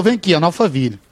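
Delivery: normal talking voice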